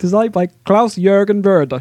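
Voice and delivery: slight hint of a Swedish accent. Reading out a board game designer's name, the speaker sounds a bit Swedish-sounding. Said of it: "You sounded a bit Swedish there".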